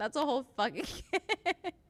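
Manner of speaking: words breaking into laughter throughout. Reacting to a clip with chat, laughing while talking. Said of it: "I'm sorry, I'm laughing".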